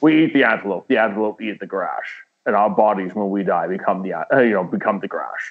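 put-on Scottish accent voice. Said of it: "Sean Connery was lined up to do the voice for, uh, Mufasa".

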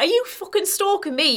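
put-on shouting. Recalling a suspicious man who walked in on the speaker, retelling a shout. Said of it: "he just literally shouted".

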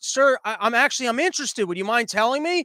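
plain

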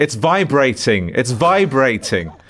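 high-pitched shouting, called out loudly. Recounting the bellboy holding up the speaker's bag, retelling his shouting. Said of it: "he was just shouting".

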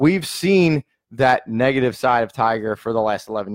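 plain

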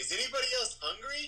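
shrill, very high shouted yell. A player's character yells a question out to everyone around: yelling. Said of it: "I'm just going to yell".

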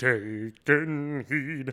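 acted harmonizing voice. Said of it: "his harmonies are like this".

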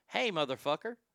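calm and relaxed with a light, bouncy lilt. Demonstrating how to say a line calmly: calm tone with a bounce. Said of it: "Let me do this calmly. ... See, that's calm. ... I got kind of a bounce in my tone".

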